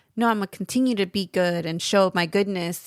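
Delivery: ordinary delivery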